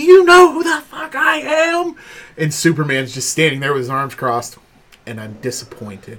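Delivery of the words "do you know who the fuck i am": high, slow, furious yell.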